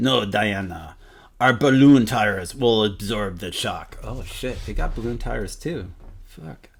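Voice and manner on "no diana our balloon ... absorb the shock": low, poor, put-on Russian accent. Voicing a character answering Diana about the landing: bad Russian accent. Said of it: "not the best uh, Russian accent".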